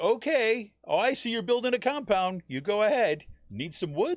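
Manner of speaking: high, loud, sarcastic mock tone. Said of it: "That's just like saying".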